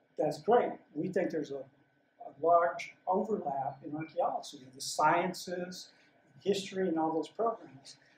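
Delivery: ordinary delivery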